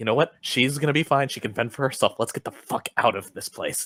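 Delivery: quiet, whispered voice. Hiding with another character in a castle, urging escape: whispering in character. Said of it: "I whisper to David as we're hiding".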